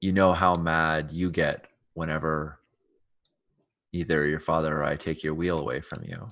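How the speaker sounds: soft, hushed whispering voice. Speaking in character, trying not to wake a sleeper: whispering. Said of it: "I whisper to her and I say".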